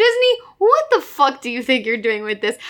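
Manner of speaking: ordinary talk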